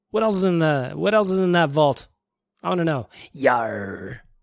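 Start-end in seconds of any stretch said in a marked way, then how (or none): 3.3-4.1 low pirate voice, long stretched "yar". Giving the only pirate line the speaker has, in a pirate voice. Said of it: "That's all I got for a pirate".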